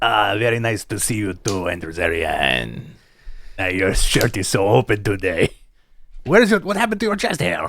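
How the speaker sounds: low put-on French accent, held throughout. Greeting another speaker during a run of wrestling impressions: French Tony Khan impression. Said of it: "Are we gonna get in trouble for French Tony Khan?".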